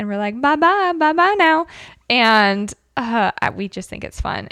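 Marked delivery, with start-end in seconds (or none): 0.4-1.7 put-on high-pitched East Texas accent, laid on thick. Showing how the coworkers repeat the goodbye: imitating Christy's thick East Texas accent. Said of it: "she has that thick East Texas accent".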